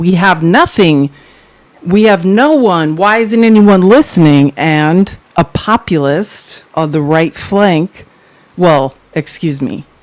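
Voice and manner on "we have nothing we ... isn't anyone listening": usual speaking voice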